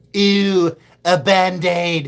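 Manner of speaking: put-on cartoon voice, high, loud, very slow and drawn out. Trying an old impression the speaker says is lost, in Stewie voice. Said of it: "I used to be able to do Stewie".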